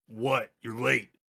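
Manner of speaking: rough, gravelly tone. The narrator voices the person answering the phone in a gruff voice. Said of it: "A gruff voice picks up".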